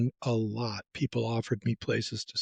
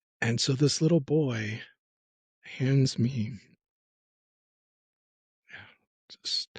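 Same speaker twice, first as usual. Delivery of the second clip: choked-up voice cracking and breaking with emotion. Speaker recounting a boy handing them a homemade lunch, choked up. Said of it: "sorry, choked up again".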